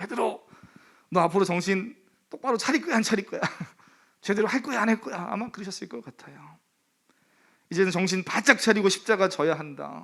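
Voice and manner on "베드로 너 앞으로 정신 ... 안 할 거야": stern, demanding, grilling voice. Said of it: "목소리가 톤이 다르시겠죠".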